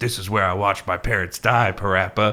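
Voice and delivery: gruff superhero voice. Speaker describing a fan video where Batman talks to Parappa, gruff Batman voice. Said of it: "Batman in a gruff voice saying".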